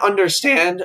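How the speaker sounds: voice breaking and cracking mid-line. Mid-rant about a show's writers, speaker's voice cracking. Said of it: "my voice cracked".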